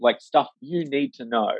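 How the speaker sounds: normal talking voice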